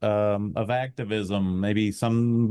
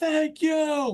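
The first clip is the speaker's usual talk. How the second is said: very high, loud, echoing yell. Retelling yelling thanks after a concert: retelling a loud yell. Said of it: "I'll yell".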